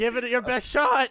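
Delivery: high, loud voice cracking as it goes. Voicing a character who dares a player to punch him: voice cracking. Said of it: "his voice cracking".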